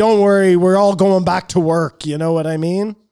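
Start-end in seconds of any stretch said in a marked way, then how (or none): 0.0-2.1 loud, cocky, bragging, boastful tone. Retelling what another speaker said earlier: imitating Kamar. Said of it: "That was my Kamar impression".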